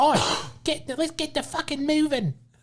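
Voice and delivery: put-on New Zealand accent. Quoting what he frequently said, in a bad new zealand accent. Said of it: "I don't have a good New Zealand accent".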